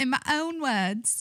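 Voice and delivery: high, slow fake Scottish accent. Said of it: "what's the Scottish thing?".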